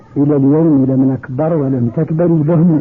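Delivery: plain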